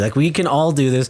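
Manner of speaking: plain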